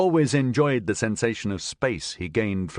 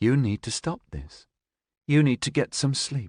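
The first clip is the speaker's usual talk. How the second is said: icy, controlled, composed calm firmness; 4 semitones higher than usual. A narrator reads a woman's reply to a man: icily calm voice. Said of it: "she said in an icily calm voice".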